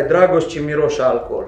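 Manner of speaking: plain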